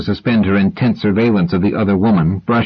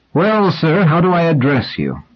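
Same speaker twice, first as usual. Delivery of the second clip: perked-up, lively, animated delivery, pitched up; 8 semitones higher than usual. Reading a story: near the end of a quiet lunch, one diner stirs and speaks; lively. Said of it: "said in a lively voice".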